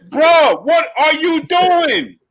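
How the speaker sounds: put-on very high, stretched-out, drawn-out scream. Retelling yelling at a phone while watching a fight: retelling a scream. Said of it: "I'm screaming at the phone".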